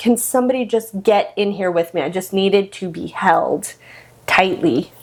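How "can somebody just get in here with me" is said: put-on crying, tearful pleading tone. Retelling asking for someone to get in the water, imitating own past crying. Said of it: "I remember just crying".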